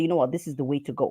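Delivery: ordinary delivery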